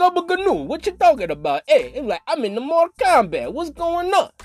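attempted Italian accent. Imitating how a man he describes sounded, in a bad Italian accent. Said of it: "He sounded like".

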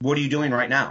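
ordinary talk, nothing marked

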